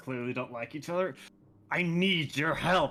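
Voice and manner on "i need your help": very disgruntled, deeply annoyed, slower. Playing a character asking someone to stay, very disgruntled. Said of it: "in a very disgruntled voice".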